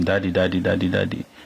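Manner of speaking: normal talking voice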